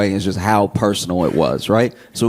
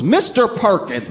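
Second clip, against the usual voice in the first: fed-up, frustrated call-out, pitched up; 10 semitones higher than usual. Retelling a classroom scene: imitating a frustrated teacher calling out a kid. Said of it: "the teacher gets frustrated, turns around, points out one kid and goes".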